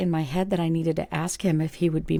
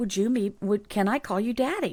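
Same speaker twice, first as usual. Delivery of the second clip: half-hearted, put-on mild yell; 4 semitones higher than usual. Retelling repeating the question a little louder: imitating a mild yell. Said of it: "I just kinda yelled it a little louder".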